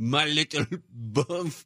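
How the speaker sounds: put-on French accent. Describing how french people go around talking, imitating a french accent. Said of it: "And they walk around and they go".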